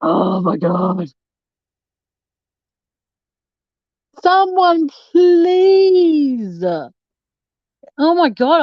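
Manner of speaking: put-on loud, very slow childlike whine, "please" stretched out. Streamer denies crying to viewers, then whines like a child. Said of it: "I sound like a wh- whining little child".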